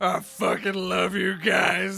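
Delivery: put-on emotional drunk voice. Describing what kind of drunk the character is: Carrick as an emotional drunk. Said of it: "Carrick's the one who's like".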